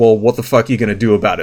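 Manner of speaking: put-on smug attitude. Retelling how a woman who kicked a girl looked back, retelling a smug taunt. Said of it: "gives this like super smug fucking look".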